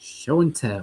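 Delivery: dry, flat delivery without flair. Answering the cue for the show-and-tell segment, in a dry, flat delivery. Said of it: "that was dry like the Clear Eyes commercial".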